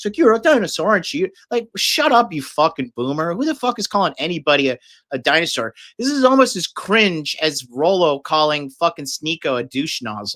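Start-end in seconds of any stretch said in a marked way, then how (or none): 0.2-1.3 giddy, high-pitched, gloating. Mocking a clip of Piers Morgan getting giddy: imitating a giddy Piers Morgan. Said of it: "getting giddy".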